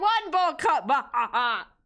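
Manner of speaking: gloating tone, then a cackle. Counting bowl cuts like on Sesame Street: the Count voice. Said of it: "you gotta say it like the count".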